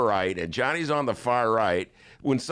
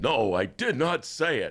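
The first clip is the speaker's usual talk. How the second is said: badly done put-on voice, slow and drawn out. Retelling a debate answer, imitating the candidate: bad Bernie Sanders impression. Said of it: "That's like a bad".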